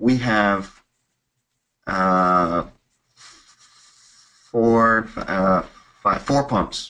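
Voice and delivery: very slow, faltering, hesitant, with drawn-out uh. Example of using tonality to trigger more questions: hesitant answer. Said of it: "I'm going to use tonality with a bit of hesitance".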